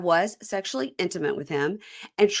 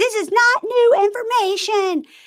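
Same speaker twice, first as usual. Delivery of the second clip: shrill, very high-pitched, slow, raised yell; 7 dB louder than usual. Retelling how someone yelled through a bedroom door: imitating someone yelling. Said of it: "She's yelling through the door saying".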